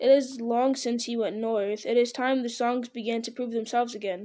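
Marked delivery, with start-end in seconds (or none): none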